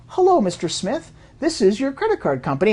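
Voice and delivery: pleasant, nice, friendly Midwestern manner. Speaker imitates a fraud call center caller on the phone, nice Midwestern voice. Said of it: "People with nice Midwestern voice gets on the phone and goes".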